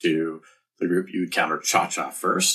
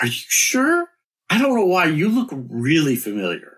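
put-on somewhat drunk, pitched way up; 12 semitones higher, 6 dB louder than usual. Improv character talking to someone who says they've never met: somewhat drunk. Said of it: "Somewhat drunkenly".

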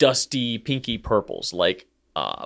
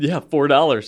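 keen, thrilled, all-excited, eager tone; 4 semitones higher, 4 dB louder than usual. Retelling your own answer about an item's price, acting out your past excitement. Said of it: "I was all excited".

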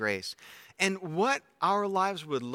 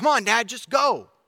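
put-on very loud, high, impatient child's screaming outburst; 7 semitones higher, 8 dB louder than usual. A father retells his youngest son in the back seat: retelling a scream. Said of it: "he basically screams out".

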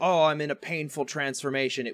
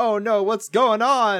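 mock frantic, freaking-out, high, loud panicked cry; 8 semitones higher, 7 dB louder than usual. Retelling a show scene where the girlfriend panics: imitating freaking out. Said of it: "the girl starts freaking out".

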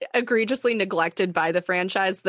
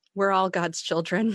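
weary sighed delivery. Retelling a character's reply to someone's remark: imitating a weary sigh. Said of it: "she just kind of sighs".

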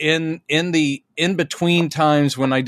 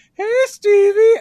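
put-on dumb voice, much higher and louder; 5 dB louder than usual. Retelling calling out to a stranger as they got close, put-on dumb voice. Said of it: "I did it just like that with a dumb voice".

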